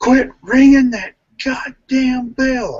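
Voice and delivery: put-on shrill, very high angry yell, as loud as possible. Retelling how a man yelled across the park, acting out a yell as loud as possible. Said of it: "he yells".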